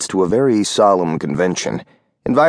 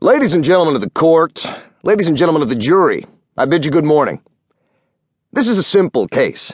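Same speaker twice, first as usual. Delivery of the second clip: combative, loud, almost belligerent voice, pitched up; 8 semitones higher than usual. A man opens his address to the court and jury: loud, almost belligerent voice. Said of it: "he spoke in a loud, almost belligerent voice".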